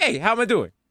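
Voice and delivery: mock New York politician voice. Mocking a mayor who only ever does his catchphrase: Ed Koch catchphrase impression. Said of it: "It's just him doing a catchphrase like".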